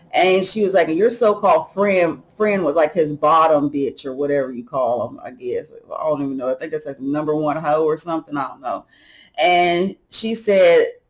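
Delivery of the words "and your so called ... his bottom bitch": plain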